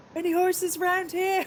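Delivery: shouting loudly. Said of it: "and you yell really loudly".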